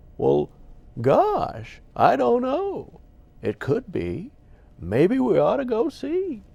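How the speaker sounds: very high, slow, swooping voice. Showing the voice used to play a worm: older Don Knotts voice. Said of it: "he would talk like this and say".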